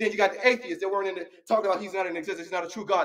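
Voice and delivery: worked-up, rapid preaching-style rush of words.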